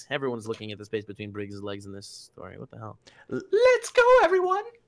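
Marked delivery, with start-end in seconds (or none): 3.3-4.6 very high, eager, excitable schoolgirl squeal. Narrating a story, voicing a truck that shouts, in an excitable schoolgirl voice. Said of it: "in the voice of an excitable schoolgirl".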